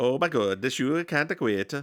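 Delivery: put-on mock German accent. Acting out a coach upset with Gunner, in a fake German accent. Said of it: "Just do your German one".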